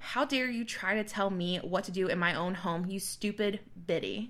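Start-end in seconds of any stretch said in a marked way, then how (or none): none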